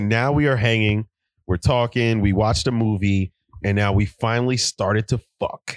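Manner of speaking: ordinary talk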